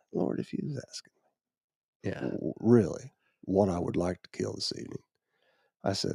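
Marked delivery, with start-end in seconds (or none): 0.1-5.0 mock quiet muttering under breath, quieter. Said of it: "I was talking under my breath".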